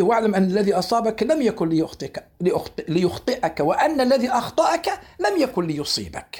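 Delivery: ordinary talk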